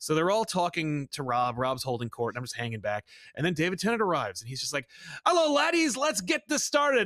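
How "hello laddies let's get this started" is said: hyped, very high-pitched, loud burst of energy. Retelling meeting David Tennant at a signing: imitating a hyped David Tennant. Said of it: "he is so hyped and ready to go".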